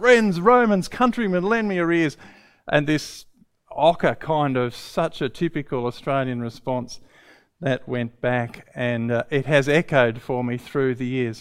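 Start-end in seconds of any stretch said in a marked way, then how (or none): 0.0-2.2 high, loud, bursting, theatrical put-on cry. Recounting a memory, the speaker acts out a person's cry: retelling an exuberant cry. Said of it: "bursting with exuberance and just cried out".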